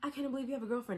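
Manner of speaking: play-acted small, high, mocking teasing voice. Retelling what a character said after they stepped away: imitating a little mocking voice. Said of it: "in that little, like, mock voice".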